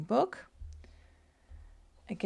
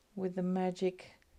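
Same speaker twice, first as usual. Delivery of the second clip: plain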